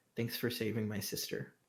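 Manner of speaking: barely audible, very quiet hushed whisper. Voicing a character thanking another for saving his sister: whispering. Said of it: "and he just whispers".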